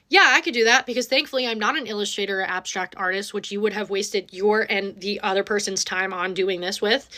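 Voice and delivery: ordinary talk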